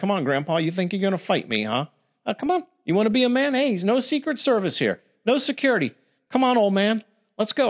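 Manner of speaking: put-on taunting kid voice. Imagining taunting an old man who wants to fight: mock taunting like a kid. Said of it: "I'll start sounding like a millennial or a kid".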